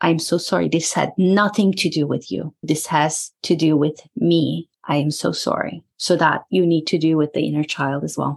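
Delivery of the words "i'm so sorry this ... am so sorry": usual speaking voice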